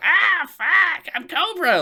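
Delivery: very high, loud, drawn-out squealing idiot voice. Showing how the villain should sound: high-pitched Cobra Commander voice. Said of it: "I want high-pitched piece of shit, like, shitty Cobra".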